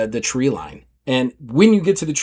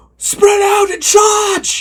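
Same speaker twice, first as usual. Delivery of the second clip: very high, drawn-out, hollered yelling; 4 dB louder than usual. Voicing a pirate leader ordering the crew: yelling an order. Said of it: "he yells at".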